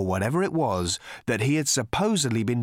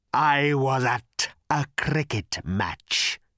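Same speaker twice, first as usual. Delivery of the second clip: harsh, raspy creature voice from the throat. Narrator reads a three-eyed creature's line as Arthur listens, rasping. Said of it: "he rasped".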